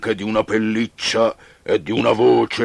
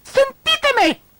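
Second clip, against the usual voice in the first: tiny, very high, squeaky mouse voice. Reading a fable aloud, Mouse cuts in: squeaking mouse voice. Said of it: "squittì Topo".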